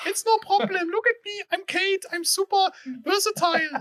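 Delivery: high-pitched, slow, drawn-out, indifferent put-on voice. Speaking for a muted colleague named Kate: high-pitched voice imitating Kate. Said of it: "your high-pitched whatever voice".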